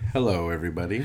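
deep, put-on baritone voice. Greeting podcast listeners as a guest, put-on baritone voice. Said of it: "the baritone you put in your voice".

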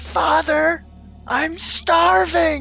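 put-on young man's cry. Narrating a scene, voicing a young man crying out from beneath the floor. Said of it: "you hear a young man's voice cry out".

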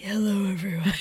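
sleepy, soft whisper, just-woke-up sound.

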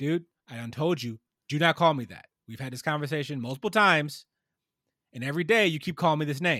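firm, strict tone. Showing how to make a point in the office, the speaker uses a stern voice. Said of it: "like with a stern voice".

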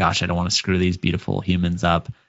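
usual speaking voice

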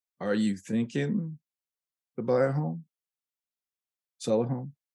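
drawn out, very slow, deliberate, word by word. Showing how a home seller sounds on the phone talking too slow, too deliberate. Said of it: "if you talk too slow, too deliberate".

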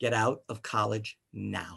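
very quiet, low, slow, hushed voice. Retelling what a woman said after pulling him aside, retelling her very quiet words. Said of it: "she very quietly said".

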